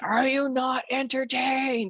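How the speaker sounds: very high, stretched-out, drawn-out screaming cry. Recalling a game, the speaker retells the listener coming back, imitating someone screaming. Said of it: "and you just screaming".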